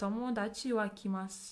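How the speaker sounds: ordinary talk, nothing marked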